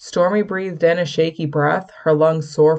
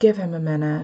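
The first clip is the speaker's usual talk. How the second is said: hushed whispering; 3 dB quieter than usual. Willow answers Stormy's look of concern about Mark, whispered. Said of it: "she whispered".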